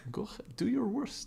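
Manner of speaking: put-on very high-pitched voice with a Russian accent. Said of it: "that's my Russian".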